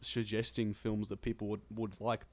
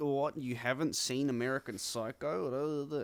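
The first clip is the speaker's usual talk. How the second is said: slow, snooty, condescending drawl with drawn-out word; 4 semitones higher than usual. Describing a TikTok meme about film students, imitating a film student. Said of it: "film students go like".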